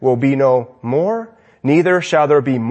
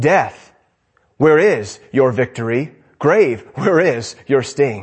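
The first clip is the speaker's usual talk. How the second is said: put-on mocking voice, lower pitch; 3 semitones lower than usual. A sermon speaker quotes a scripture line, quoting a taunt mockingly. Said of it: "Paul even says it mockingly".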